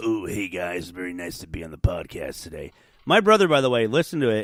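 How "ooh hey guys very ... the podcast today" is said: easygoing, casual, relaxed voice. Doing an impression of a brother who guested on the podcast: Brandon voice. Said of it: "I'm talking like Brandon right now".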